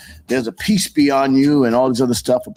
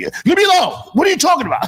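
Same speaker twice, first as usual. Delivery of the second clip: put-on very high, swooping shouting outburst. Retelling a reaction when grown daughters flip: imitating own yelling. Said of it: "I just yell".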